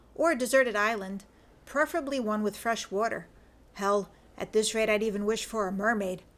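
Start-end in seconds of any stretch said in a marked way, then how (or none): none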